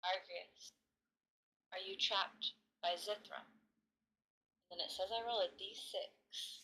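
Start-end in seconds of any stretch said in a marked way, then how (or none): 0.0-3.4 whispering quietly. Voicing a character who asks a question alone on her bed: whispering to herself. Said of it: "whispers to herself".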